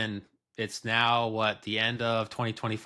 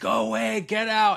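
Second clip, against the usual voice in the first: put-on, very high, shrill, ragged screaming; 11 semitones higher, 4 dB louder than usual. Retelling what she screamed at him: retelling her screaming. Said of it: "she starts screaming".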